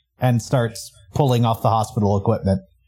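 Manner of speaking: ordinary talk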